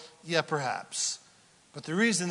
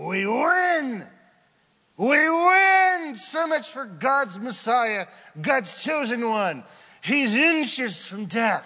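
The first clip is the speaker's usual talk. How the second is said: loud, high, mocking cackling demon, "win" drawn out; 7 semitones higher, 6 dB louder than usual. Speaker voicing the demons during the crown-of-thorns scene, mock cackling demon voice. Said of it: "cackling, and mocking".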